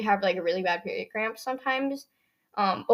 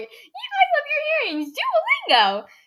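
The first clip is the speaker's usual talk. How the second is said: really high-pitched, swooping sing-song teasing, mocking; 4 dB louder than usual. Retelling making fun of her, calling her duolingo, in a mocking high-pitched voice. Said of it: "in a really high pitched voice".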